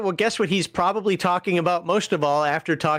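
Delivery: ordinary talk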